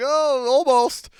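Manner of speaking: very high, loud, popping announcer yelp. Retelling a play the commentator called: Tony Romo impression. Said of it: "He's like".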